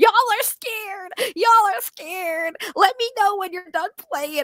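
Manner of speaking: mock very high-pitched, whiny crybaby voice. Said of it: "crying in the back".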